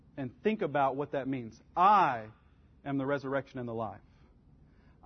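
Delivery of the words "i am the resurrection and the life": extra stress on the word "I". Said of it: "emphasizing a different word each time".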